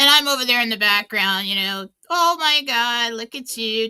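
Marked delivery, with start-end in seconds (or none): 2.1-3.9 put-on gushing, higher pitch. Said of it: "talking to the parents in the street".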